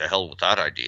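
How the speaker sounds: low, mumbled, muttered aside under the breath. Retelling a line from a film, muttering under his breath.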